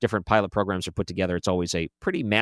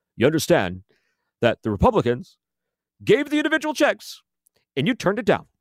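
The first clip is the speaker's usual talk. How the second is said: very high, swooping politician-style rant; 10 semitones higher than usual. Commenting on a stimulus deal, doing a Bernie Sanders impression. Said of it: "let me do my best Bernie Sanders for you".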